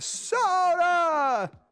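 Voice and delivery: very high swooping shout, soda stretched out. Cueing a yelled soundbite for the stream: Joe Biden voice. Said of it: "cue the Joe Biden voice".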